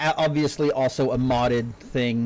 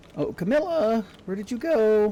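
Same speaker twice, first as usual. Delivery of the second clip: voice breaking partway, high-pitched, cracking; 9 semitones higher than usual. Looking for Camilla during a game, the speaker calls out, voice cracking. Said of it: "I love how my voice cracked then".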